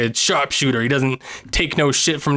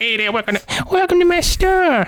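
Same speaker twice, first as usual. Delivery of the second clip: silly, very high-pitched, funny shopkeeper voice; 14 semitones higher than usual. Imagining running a game storefront, the speaker tries a funny shopkeeper voice. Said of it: "you can make a funny voice for your guy".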